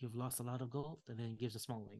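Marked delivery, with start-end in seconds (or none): 0.0-1.0 hushed whisper. Voicing a character who quietly tells two players something: whispering. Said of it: "he whispers to the two of you".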